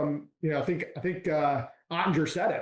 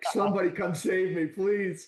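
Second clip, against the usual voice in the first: put-on frightened pleading, higher; 3 semitones higher than usual. Retelling being pinned against a wall, feet dangling: retelling a frightened plea. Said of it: "I'm like".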